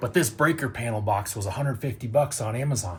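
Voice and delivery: hushed whisper. Showing a breaker panel box from behind the Airstream, whispering. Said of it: "I'm not sure why I'm whispering".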